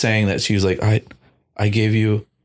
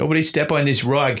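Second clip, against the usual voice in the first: put-on thick, heavy Boston accent, higher pitch; 5 semitones higher than usual. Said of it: "a thick Boston accent".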